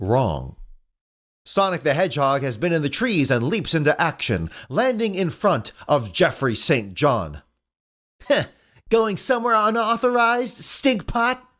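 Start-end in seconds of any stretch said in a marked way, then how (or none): 8.3-11.4 very high, attempted Cockney accent. Narrating a scene, voicing Sonic as he confronts another character: attempted Cockney accent. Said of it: "I'm trying to do British. Cockney".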